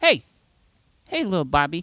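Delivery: put-on very serious, quiet, hushed voice. Showing how to talk to a kid up close: real serious, real quiet. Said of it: "I get real serious".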